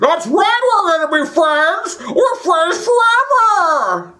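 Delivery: play-acted, wildly exaggerated, over-the-top delivery, very high-pitched. Retelling reading the script, imitating an over-the-top line reading. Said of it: "everything that I did was over the top".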